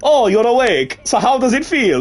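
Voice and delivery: put-on Russian accent drifting into Italian accent. Asked to say something in a russian accent: attempted russian accent. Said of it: "Russian, there we go".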